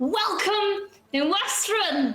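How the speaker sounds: loud calling out. Voicing Madeline raising her glass to greet the party: shouting as Madeline. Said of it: "She raises her glass and she shouts".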